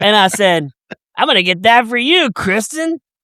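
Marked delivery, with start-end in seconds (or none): 1.2-3.0 acted, high announcer tone. Recounting calling out to kristen about a nightie, retelling saying it loudly. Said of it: "I said it really loud".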